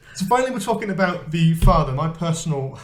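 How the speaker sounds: high, stifled laughter, on the verge of cracking up. Restarting an intro after a fit of joking, holding back laughter. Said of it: "So I sound like I'm gonna laugh".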